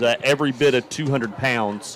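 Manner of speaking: ordinary talk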